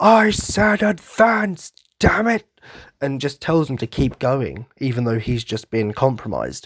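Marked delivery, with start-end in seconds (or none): 0.0-2.4 put-on shrill, very high, dragged-out scream. Retelling a YouTube clip where the wounded commander screams, imitating Commander Erwin screaming. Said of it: "he just screams".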